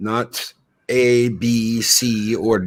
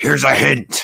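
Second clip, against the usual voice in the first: low gruff villainous voice; 3 semitones higher than usual. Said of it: "the very deep, gruff voice of Megatron".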